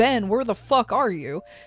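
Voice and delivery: mock angry shouting. Retelling friends storming in looking for someone: imitating angry shouting. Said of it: "they're shouting".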